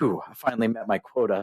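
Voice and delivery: put-on mumbled delivery. Retelling a character walking away after a sale, imitating a mumble. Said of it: "you hear him mumble".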